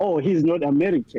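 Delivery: normal talking voice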